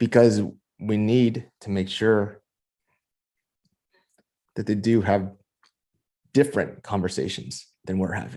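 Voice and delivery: holding back emotion. Talking about what success means for one's kids, holding back emotion. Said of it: "I'm trying to p-, pull it back right now".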